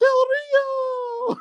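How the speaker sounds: put-on very high, loud little-kid squeal.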